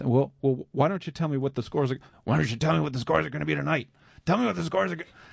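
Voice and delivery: gravelly, creaky, needling, skeptical rasp. Retelling how the skeptical radio host challenged a caller: impression of the radio host Larry. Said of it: "That was a good impression of fine".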